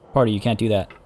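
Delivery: normal talking voice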